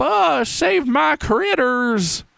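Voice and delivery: high, slow, creaky, raspy character voice. Describing a game voice sample where a man voices Jesse: man's Jesse voice impression. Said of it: "they got a man to do the voice of Jesse".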